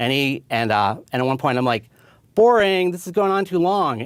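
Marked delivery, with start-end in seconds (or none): 2.3-4.0 mock heckling yell, way up high. Retelling heckling a leader who kept reading his speech notes: retelling a yell. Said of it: "And I yelled at him".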